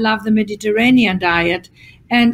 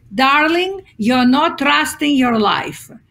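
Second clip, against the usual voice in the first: put-on fabulous Greek accent; 4 semitones higher than usual. Quoting how the speaker's mother answered anxious people, imitating a greek accent. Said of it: "she would say with this fabulous Greek accent".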